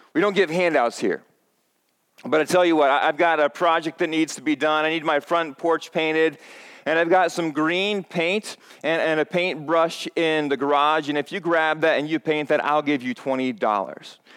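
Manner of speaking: ordinary delivery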